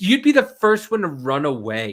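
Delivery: ordinary talk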